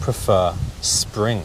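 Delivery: clear, careful enunciation, every word distinct.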